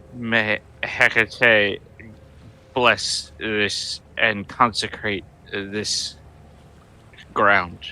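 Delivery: slow, solemn proclamation.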